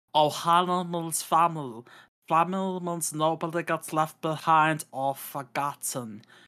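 bad, slow, drawn-out cartoon alien voice. Host moving on to the next news item: terrible Stitch impression. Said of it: "That was my terrible Stitch impression".

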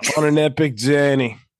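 slow, unhurried put-on Australian accent. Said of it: "now it's Australian".

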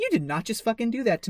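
imitated furious angry outburst. Retelling a movie scene where the Chamberlain gets furious: imitating a furious character. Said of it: "the Chamberlain gets really fucking pissed".

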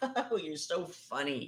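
very drawn-out, slow, giggly, flirty voice. Acting out an imagined scene where the wife flirts with god: imitating giggling flirtation. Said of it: "your wife's giggling all over him".

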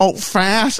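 nasal put-on New York voice. Retelling a character's impression of another character: Fran Drescher voice. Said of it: "I'm going Fran Dresser from The Nanny".

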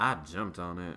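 very low, very soft, creepy seductive voice. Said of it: "I said that in a very creepy".

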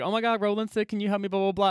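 ordinary delivery

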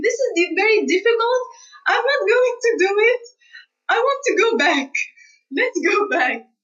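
high, tearful, pleading tone. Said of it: "I returned at home and I was crying".

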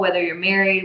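normal talking voice

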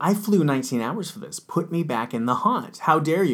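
mock furious, affronted, high indignant outburst. A speaker retells what a woman said after being brought out of a haunt: imitating someone angry. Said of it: "she got real mad at me".

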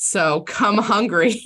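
laughing through the words, can't keep straight face. Wrapping up the episode with a food pun, laughing while talking. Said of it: "I couldn't say that with a straight face".

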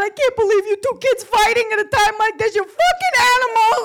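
tearful, upset voice. The speaker retells their mother scolding two fighting kids, imitating Barbara upset, crying. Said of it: "is getting all upset".

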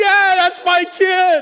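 very loud, high-pitched, proud cheering yell. Retelling relatives on the sideline cheering a kid: imitating relatives screaming. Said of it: "And they're screaming".

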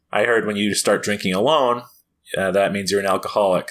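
ordinary talk

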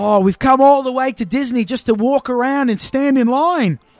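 high, loud, fake Australian accent. Retelling what a little kid at Disney said, in a fake Australian accent.

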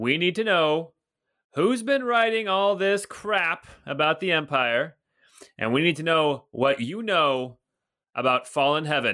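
voice over a loudspeaker. Voicing a soldier calling everyone out of the houses: amplified voice. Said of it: "suddenly you hear this kind of amplified voice".

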